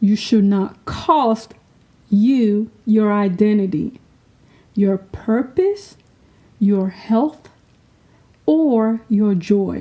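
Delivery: speaking slowly at a deliberate pace. Sharing a lesson learned with listeners, speaking slowly. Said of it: "Let me say this slowly".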